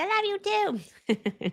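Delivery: put-on drawn-out, sing-song, very high, slow baby talk. Quoting the other person's reply in the baby voice they share, baby voice. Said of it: "talk to each other in like baby voices".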